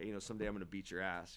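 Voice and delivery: ordinary talk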